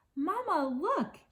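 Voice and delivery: put-on squeaky, very high, small young voice. A young gosling angles his wings and calls to his mother, squeaky Brightbill voice. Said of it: "he squeaked".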